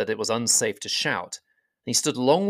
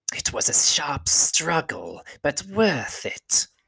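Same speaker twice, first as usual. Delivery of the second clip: thin, creaking hiss, drawn out; 4 semitones higher than usual. One of the creatures talks to another about the dwarves: thin, creaking, hissing voice. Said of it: "Their voices were a sort of thin, creaking and hissing".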